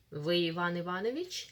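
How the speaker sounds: rising yes-no tune on Иванович. Teaching general questions, say вы иван иванович with rising intonation. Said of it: "Mind the intonation, general question. The rising one".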